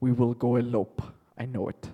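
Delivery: put-on Russian accent. Telling a story, speaker voices Boris after he sees Olga, Boris's Russian accent. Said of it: "Russian accent even".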